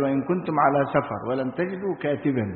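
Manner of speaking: ordinary talk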